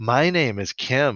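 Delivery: slow, sultry, put-on seductive feminine voice. Speaker quotes a character introducing himself: sultry feminine voice. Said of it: "he says in like a sultry feminine voice".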